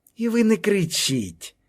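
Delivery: composed, unruffled, calm, a touch high. Hryts, confronted by a man demanding who he is, replying calmly. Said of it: "спокійно сказав Гриць".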